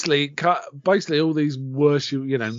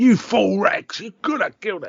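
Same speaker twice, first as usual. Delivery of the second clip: pitched-up, scolding telling-off; 6 semitones higher than usual. Retelling the Duke scolding Rex for butting in: imitating the Duke telling someone off. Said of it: "telling people off".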